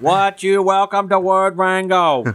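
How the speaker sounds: slow, high-pitched Boston accent. Suggesting an intro for the show in a Kennedy accent. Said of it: "a Kennedy, um, accent".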